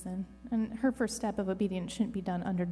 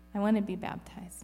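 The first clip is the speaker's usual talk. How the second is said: ordinary delivery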